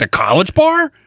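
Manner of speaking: snooty, high-pitched tone.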